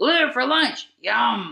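animated, high, swooping, sing-song cartoon voice. Asked for an impression of a character, the speaker obliges: Jake impression. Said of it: "Give me an impression of a character".

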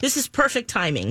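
plain

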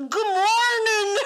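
very high, worst fake Australian accent. Retelling a man's phone video greeting to a friend, in a bad Australian accent. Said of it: "I'm the worst Australian accent ever".

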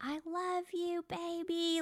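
put-on very high, slow, drawn-out, loving baby talk. Showing how a parent talks to a newborn: higher voice to a baby. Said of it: "your voice goes higher and your eyes get wide and you're usually smiling".

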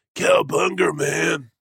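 very high-pitched cartoon turtle voice. Playing at voicing the Turtles: Ninja Turtle voice. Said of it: "do the voices for all the Turtles".

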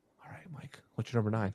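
low, hushed whisper. Asking another speaker for their number nine, talking low. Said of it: "Why am I talking so low?".

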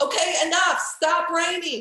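mock high yelling, shouted upward. Out on a walk with her husband, retelling yelling at the sky. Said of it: "I'm yelling at the sky like".

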